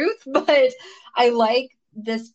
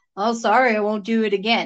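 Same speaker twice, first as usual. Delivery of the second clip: mock deadpan drone, flat monotone, no tune at all. Describing how they played a man who stares someone down after being hit: flat monotone. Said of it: "made it almost like a monotone way".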